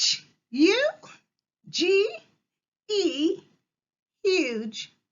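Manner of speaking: very high, very drawn-out, slow chicken-like squawking. Spelling out the last word of the list, the speaker squawks like a chicken. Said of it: "squawk it like a chicken".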